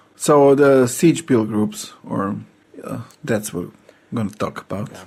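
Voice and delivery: slow, softening, unenthusiastic delivery.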